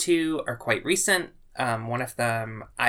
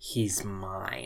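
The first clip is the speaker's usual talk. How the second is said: put-on, really menacing, low, hushed delivery; 5 semitones lower, 9 dB quieter than usual. Retelling to the listener what they once said about an artist, mock-menacing. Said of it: "really menacingly".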